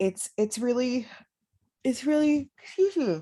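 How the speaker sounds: yawning while talking, mid-yawn. Speaking to listeners late at night after being up with a sick baby, yawning. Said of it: "I'm sorry, I'm yawning".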